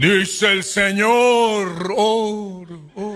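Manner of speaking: slow, loud, mock booming, echoing, movie-style voice.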